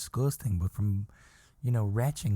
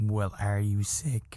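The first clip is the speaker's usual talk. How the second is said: mock suspicious, probing tone. Retelling how work reacts to a sick call: imitating suspicious coworkers. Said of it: "very suspicious".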